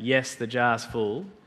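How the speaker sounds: acted sheepish voice. Telling a story about a professor and a jar, acting out the students' sheepish reply. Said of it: "sheepishly say".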